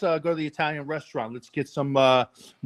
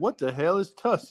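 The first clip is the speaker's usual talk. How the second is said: poorly done, bad Southern accent; 2 semitones higher than usual. Retelling explaining a deodorant to Bubba, imitating him in a bad Southern accent. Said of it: "You do the worst Southern accent".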